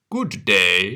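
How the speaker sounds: growling wolf voice. Reading a story aloud, the wolf greets Little Red, growling. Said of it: "growled the wolf".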